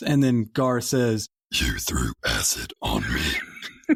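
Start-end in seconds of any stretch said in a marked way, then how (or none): 1.5-4.0 very low, very slow alien voice, deep and drawn out. Reenacting a film scene, answering a human's accusation: Gar impression. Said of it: "my Gar impression".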